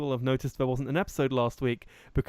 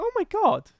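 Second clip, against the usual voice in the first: sudden, very high-pitched exclamation. Showing how the voice jumps at the end of sentences: really high-pitched. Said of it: "where it just goes really high pitch".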